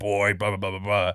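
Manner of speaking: deep voice, dropped right down low. Retelling a game announcement at a packed theater: deep Kratos voice. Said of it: "this deep voice".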